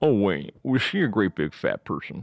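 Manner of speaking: creepy, unsettling voice. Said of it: "he goes".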